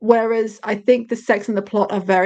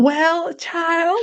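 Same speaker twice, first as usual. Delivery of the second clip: over-the-top, exaggerated Southern accent, pitched up; 8 semitones higher than usual. Retelling how a performer voices Shane's parents, in an exaggerated Southern accent. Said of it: "this guy does is like so southern".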